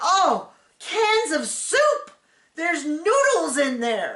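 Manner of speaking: put-on high, strained drawl dripping with disgust. Retelling her opening another cupboard: imitating her strained disgusted voice. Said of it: "just doing that hurt my voice".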